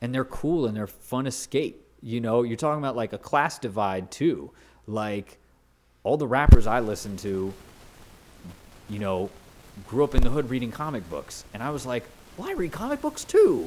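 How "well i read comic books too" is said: put-on very high, kid-like pitched voice. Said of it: "Did you say it like that?".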